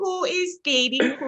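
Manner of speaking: put-on high-pitched, slow baby talk voice. Showing the others the voice a mother made up: imitating mom's baby voice. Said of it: "it was just a baby voice".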